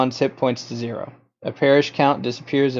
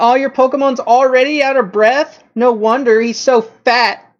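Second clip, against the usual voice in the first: very high, loud, snide, jeering mockery; 11 semitones higher, 7 dB louder than usual. Voicing Cindy mocking a player's tired Pokemon: Cindy's mocking taunt. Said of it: "Cindy will say".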